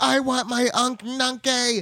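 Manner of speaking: very high, full-on shrill sobbing wail and scream. Recapping the story, the speaker acts out Ojo's outburst, imitating a screaming tantrum. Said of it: "He is screaming".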